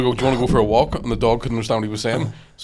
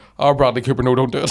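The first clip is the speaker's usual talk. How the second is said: ordinary delivery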